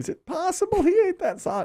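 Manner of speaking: high wondering tone.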